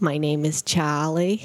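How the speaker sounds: New England Maine accent. Podcast host signing off to listeners, Maine accent. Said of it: "in a Maine accent".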